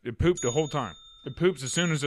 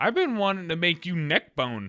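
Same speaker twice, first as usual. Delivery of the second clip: normal talking voice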